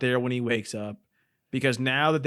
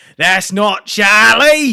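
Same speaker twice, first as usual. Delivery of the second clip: put-on very loud, high yell in a British accent; 8 semitones higher, 14 dB louder than usual. Retelling a movie scene at an opened casket: imitating a British-accented yell.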